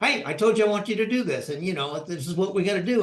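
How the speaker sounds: fast, bossy, authoritarian, rank-pulling commanding tone. A speaker acts out a boss reacting to an employee's question, mimicking an authoritarian boss. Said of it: "that authoritarian hat on".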